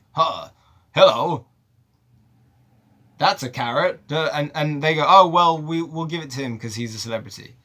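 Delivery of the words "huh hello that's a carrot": plain, natural, own speaking voice. Retelling an actor auditioning to voice a cartoon rabbit: Chris Pine impression. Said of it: "I'll just play him like me".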